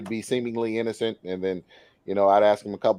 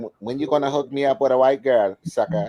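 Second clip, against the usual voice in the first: put-on Ethiopian accent; 4 semitones higher, 4 dB louder than usual. Retelling what an Ethiopian friend asks: imitating an Ethiopian accent. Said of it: "he's got the accent".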